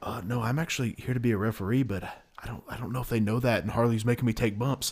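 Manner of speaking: put-on whisper. Retelling what a referee said at training: imitating someone whispering. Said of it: "he's kinda just whispering this to me".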